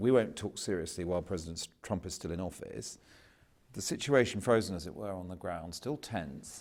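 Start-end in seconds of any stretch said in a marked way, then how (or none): none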